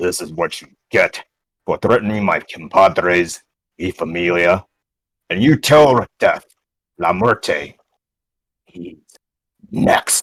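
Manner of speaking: very deep, low growling voice. Narrating a scene, voicing one character threatening another: deep growling voice. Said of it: "in a very like deep, like growling voice".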